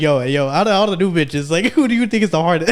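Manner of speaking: offhand, laid-back, nonchalant, casual tone. Retelling how a friend casually asked a question: imitating a nonchalant question. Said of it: "nonchalantly be like".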